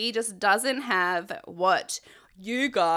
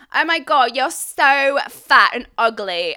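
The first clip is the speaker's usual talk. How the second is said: very loud, belted-out broad London geezer voice; 5 semitones higher, 8 dB louder than usual. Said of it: "my geezer voice. ... Got me [name] voice on again".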